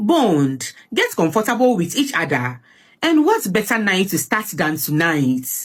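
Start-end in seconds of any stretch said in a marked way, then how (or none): none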